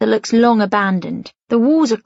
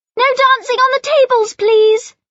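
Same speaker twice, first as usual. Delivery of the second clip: very high, piercing, shrill tone; 3 dB louder than usual. Mum, interrupted on the phone, calls out to the laughing children: shrill voice. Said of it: "Mum says in a shrill voice".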